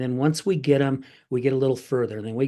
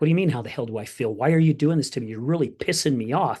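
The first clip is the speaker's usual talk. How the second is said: mock angry outburst. Retelling a therapy session where the therapist provoked him: imitating his own angry outburst. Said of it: "And I was getting angry".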